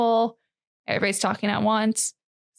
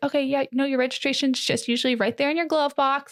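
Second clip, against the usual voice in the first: mock super sweet, patronizing condescending tone; 4 semitones higher than usual. Retelling how the ones checking the speaker's license talked, imitating condescendingly sweet tone. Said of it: "almost condescendingly sweet".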